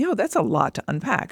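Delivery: ordinary delivery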